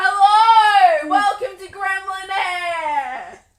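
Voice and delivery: very loud, high, slow creepy delivery. Joking as the podcast begins, welcoming listeners: put-on creepy voice. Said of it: "Do I go all creeper and be like".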